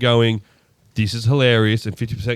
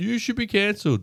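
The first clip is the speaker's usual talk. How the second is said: put-on yelling, higher; 10 semitones higher, 6 dB quieter than usual. Retelling comedy highlights where people yell at a comic: imitating people yelling. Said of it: "people yelling that".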